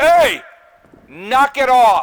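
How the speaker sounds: very loud, booming, very slow, high dad shout. Telling barking dogs to stop, after warning about sensitive ears: big dad voice shouting. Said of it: "I had to use the big dad voice".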